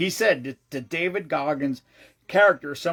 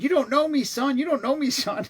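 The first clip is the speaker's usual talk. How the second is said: mock scream, very high, repeated twice; 10 semitones higher than usual. Speaker retells a camera guy's report of Goggins on the hill, imitating Goggins screaming. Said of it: "He kept screaming".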